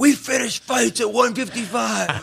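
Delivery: put-on raging shout. Retelling what a fighter said after a fight: imitating a Hulk-like outburst. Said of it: "you turned into the Hulk".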